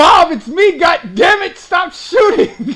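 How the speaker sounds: very slow, long, high, loud, drawn-out in-character scream. Playing a character under fire, calling to Bob: screaming in character. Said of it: "I'm gonna scream".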